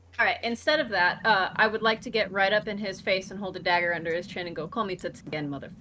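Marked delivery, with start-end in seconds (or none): 4.7-5.7 low, soft put-on Russian accent. Holding a dagger under his chin, the speaker's character threatens someone: Russian accent. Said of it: "I keep going to the Russian fucking accent".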